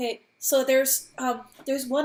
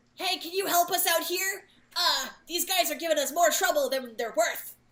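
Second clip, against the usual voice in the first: kobold-style creature voice; 4 semitones higher, 4 dB quieter than usual. Speaking into a lair, imitating the way the kobolds talk. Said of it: "imitate the way that they were talking".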